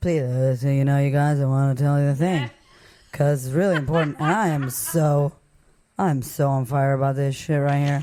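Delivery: drowsy, half-asleep delivery, dozing off. Showing how a dull podcast sounds: pretend falling asleep while talking. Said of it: "I fell asleep while I was talking".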